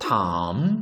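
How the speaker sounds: dip-rise tone: pitch dips then climbs on 탐. Lesson on tone rules for syllable-final consonants: falling-rising tone on 탐. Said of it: "발음이 내려갔다 올라가는 탐".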